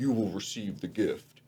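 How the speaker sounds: possessed-sounding, demonic, pronouncing voice. Recounting a general-looking guy whose voice goes demonic: imitating a demonic voice. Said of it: "his voice goes demonic".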